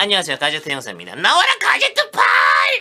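very high, swooping, drawn-out cartoon detective voice. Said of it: "제가 옛날부터 가제트를 하고 있었는데".

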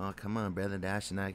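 gentle, hushed, very soft and quiet delivery. Imitating a guy who always talks soft-spoken: soft-spoken. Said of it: "he always talks soft-spoken. Doesn't sound like the voice of many waters".

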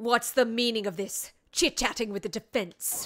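scary, stern, scolding prosecutor-like voice. Taking turns voicing characters, one speaker does the prosecutor in Von Karma voice. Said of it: "I can be him".

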